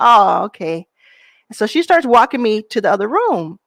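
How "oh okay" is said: put-on crestfallen, disappointed tone. Retelling own past reply, imitating own crestfallen reply.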